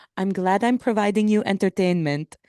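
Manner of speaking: put-on cute little Lebanese accent. Quoting their mom, often the butt of family jokes, in her cute lebanese accent. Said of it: "in her little cute Lebanese accent".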